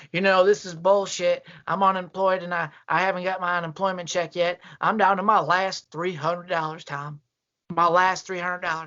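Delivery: put-on old voice, sounding miserable. Recounting a call from an unemployed man: imitating a miserable caller. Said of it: "He sounded miserable".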